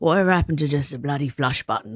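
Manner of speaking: mock muttering under the breath. Retelling what a man said as he walked past: imitating muttering under breath. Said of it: "said under, under his breath".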